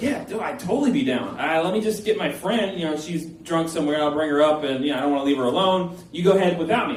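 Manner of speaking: usual speaking voice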